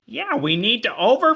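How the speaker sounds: very high, goofy voice. Trying out Muppet characters for others, the speaker does a Fozzie Bear voice. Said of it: "there's a Fozzie Bear one that's like".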